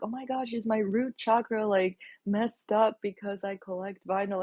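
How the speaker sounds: anxious, worried, fearful voice, pitch lifted. Retelling coming to her with a question, acting out fear in voice. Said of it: "with like fear in my voice".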